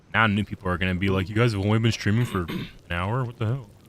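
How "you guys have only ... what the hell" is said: put-on scoffing, jeering, derisive voice. Imitating new stream viewers: imitating new viewers mockingly. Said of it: "I didn't mean to use a mocking voice".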